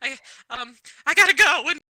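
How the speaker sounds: acted very loud, high, tearful sobbing. Playing a character who is overwhelmed by a gift: crying in character. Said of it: "actual tears start rolling down her face".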